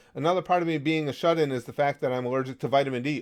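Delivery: ordinary delivery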